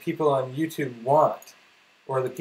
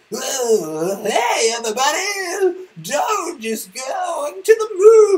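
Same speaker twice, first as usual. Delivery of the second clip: very high, loud, swooping, over-the-top fake hype; 14 semitones higher, 6 dB louder than usual. Showing how they won't act like a hype actor, in an over-the-top hype impression. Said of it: "that's my impression of the other".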